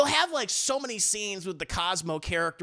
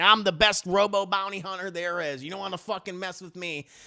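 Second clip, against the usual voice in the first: put-on Southern accent. Mocking a bad bounty hunter performance in a movie: imitating Giancarlo Esposito's Southern accent. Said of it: "he's kinda occasionally doing a Southern accent".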